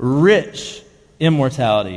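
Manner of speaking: slow, weighty stress on the word rich.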